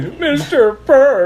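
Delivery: put-on terrible, very high ninety-year-old man voice. Saying a name as a ninety-year-old would, ninety-year-old man voice. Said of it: "Some like ninety year old guy, / That was a terrible impersonation of an old man".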